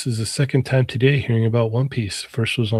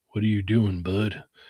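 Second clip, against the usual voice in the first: put-on very deep voice, quieter; 5 dB quieter than usual. Acting out a lookalike stranger turning around: imitating the deepest voice ever. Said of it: "He says the deepest voice ever".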